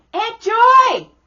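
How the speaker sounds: put-on high, loud child voice calling out. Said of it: "Not Aunt Joy".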